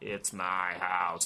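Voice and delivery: put-on angry, livid old man with cockney accent. Retelling a scene, quoting Janet's line to him in a mock-angry cockney old-man voice. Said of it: "in this really, really angry old, cockney old man voice".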